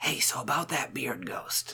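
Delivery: hushed, barely voiced, close-up whisper. Playing a character ducking behind a bar to reach another character: whispering in his ear. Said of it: "I lean over and I whisper in Andrew's ear".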